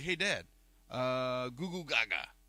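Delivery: put-on drawn-out, very slow baby talk. Retelling how Ben kept copying the baby all night: imitating baby talk. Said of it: "He'd be like".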